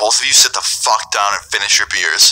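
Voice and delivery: ordinary talk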